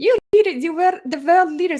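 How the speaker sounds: shrill, loud tantrum voice. Mocking a speech's wording by imitating Greta Thunberg: bad Greta Thunberg impression. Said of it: "I can't do impersonations".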